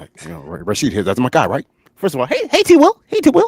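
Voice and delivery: swooping, animated coach voice with pitch swinging around. Asked to say what the football coach said: Coach Raheem impression. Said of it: "can you tell us what Coach Raheem said".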